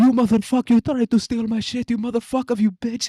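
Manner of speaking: very high, shrill, loud screaming yell. Retelling a video where a store worker hits a thief: imitating someone yelling. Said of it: "yells at him".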